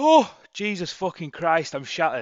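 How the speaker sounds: loud, high, yawned-out burst of exhaustion. Giving a Bitcoin chart update after a morning run: yawning while speaking. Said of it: "Do apologise for yawning".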